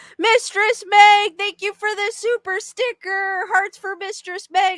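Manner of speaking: high cracking voice. Speaker reading viewer comments aloud and thanking a viewer, voice cracking. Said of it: "I don't know why my voice is cracking".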